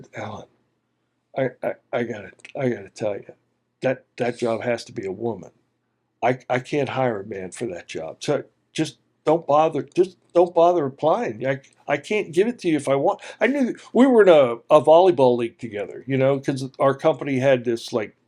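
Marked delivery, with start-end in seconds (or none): 0.1-13.2 hushed, soft, low, quiet confiding tone. Retelling what the department manager said on the phone: imitating Roger's soft, low, quiet voice. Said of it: "his voice got really soft and low and quiet".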